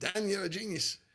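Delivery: bad Australian accent impression. Quoting an Australian customer's praise at a sound check, put-on Australian accent. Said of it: "One of my Australian customers".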